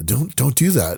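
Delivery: put-on scolding voice, as to a pet. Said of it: "almost talking to her like a, like a dog".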